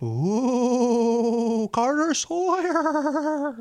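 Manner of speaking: very high spooky ghost voice, drawn-out ooh. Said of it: "I got to do a ghost voice for this".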